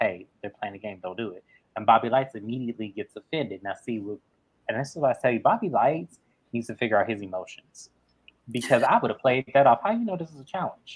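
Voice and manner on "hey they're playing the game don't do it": low, very quiet, hushed half-whisper. Retelling what someone half-whispered to Bananas, retelling a half-whisper. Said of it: "he whispers to Bananas".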